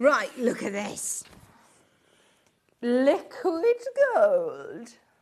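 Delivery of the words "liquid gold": goofy, silly put-on voice with swooping pitch. Showing something off to the listeners, in a funny voice. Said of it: "I said it in a funny voice".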